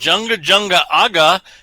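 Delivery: loud, deadly fierce, menacing voice. Voicing a character showing a device, deadly fierce voice. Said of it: "in a deadly, um, fierce voice".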